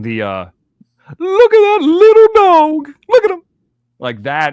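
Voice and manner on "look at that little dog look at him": ridiculous, very high, shrill and loud. Showing how he talks about his other pet, much higher voice. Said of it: "It's a lot higher".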